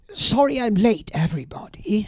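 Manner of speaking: loud, deliberate, projected voice. Retelling his late arrival at a little ceremony, in a loud voice. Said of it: "I said, in a loud voice".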